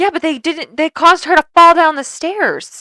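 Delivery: high, very loud, impassioned, passionate outburst. In a conversation about the cops, getting loud. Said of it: "I got loud".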